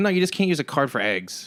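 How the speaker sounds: mock rude, snippy clerk voice. Retelling how a store clerk refused the card: imitating a snippy clerk. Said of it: "she's just really shitty about it".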